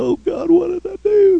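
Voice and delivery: very high, acted crying through the words. After being left to go home to mother, retelling his own crying. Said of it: "And I'm crying".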